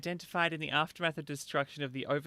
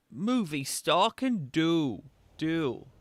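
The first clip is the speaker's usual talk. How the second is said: put-on very slow, stretched, loud American accent; 2 semitones higher, 6 dB louder than usual. Mimicking a game character's last word: imitating an American accent. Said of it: "That very last word was like an American accent".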